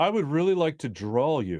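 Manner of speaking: put-on eerie, haunting child's voice. Retelling what a staring kid in the audience said: imitating his haunting delivery. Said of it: "I swear this is his delivery".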